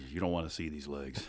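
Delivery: playfully menacing tone. Explaining never wearing shorts in summer, mock ominous tone. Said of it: "he said that with such an ominous tone".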